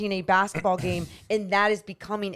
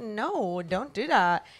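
put-on playful, joking scolding tone; 4 dB quieter than usual. Explaining how she jokes when she dislikes what the other speaker does, retelling a joking 'don't do that'. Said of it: "I like have fun and I joke about it".

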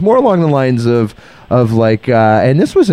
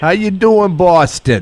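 attempted Boston accent sounding New York, pitched up; 7 semitones higher than usual. Greeting a guest named for boston in a put-on accent: attempted boston accent, sounds new york. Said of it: "No, that's New York".

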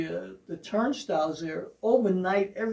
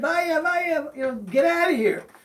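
high, put-on man's yell; 8 semitones higher, 4 dB louder than usual. Telling of a man shouting at the turnstile, retelling a man's yell. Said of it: "I start hearing him yell out".

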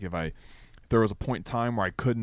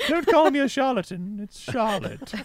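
put-on very high-pitched elderly British old lady voice; 4 dB louder than usual. Voicing Charlotte correcting how her name is said, old British lady voice. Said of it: "So she's an old British lady".

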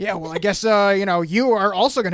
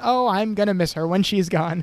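mock delivery dripping with sarcasm. Recapping a scene, quoting a character's zinger, mimicking sarcasm. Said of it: "sarcastically says".

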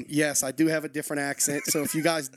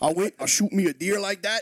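Louisiana accent, pitched up; 5 semitones higher, 4 dB louder than usual. Showing how they sound where they're from, speaking in a Louisiana accent. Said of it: "where I'm from, it might sound something more like this".

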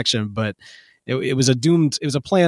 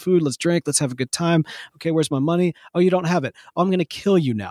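higher mock villain voice, charming then menacing; 3 semitones higher than usual. Imitating a charming villain who snaps into a threat: imitating a charming villain turning threatening. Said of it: "very charming, but also able to fly off the handle".

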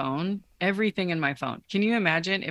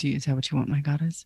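put-on robot voice, deeper pitch; 2 semitones lower than usual. Playing a robot lover answering a woman's request, deeper robot voice. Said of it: "your voice just a little bit deeper for me".

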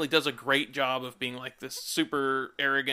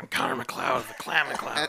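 put-on tough deep voice. Imitating an actor trying to sound tough: imitating Christopher Lambert's fake tough voice. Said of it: "when he's trying to be tough".

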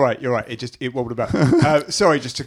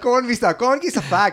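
put-on angry Glaswegian accent, higher pitched; 9 semitones higher than usual. Retelling a tense encounter after being asked to commit: angry glaswegian accent. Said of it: "commit to the accent".

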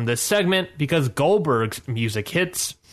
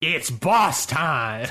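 put-on announcer voice; 2 semitones higher than usual. Asked for your best Michael Cole and told to say the line, use a Michael Cole announcer voice. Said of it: "say the line".

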